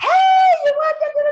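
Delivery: very high, slow, bubbly voice an octave up. Speaker on the phone pretending to be Terry, Terry voice, up an octave. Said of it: "my voice goes up and octave".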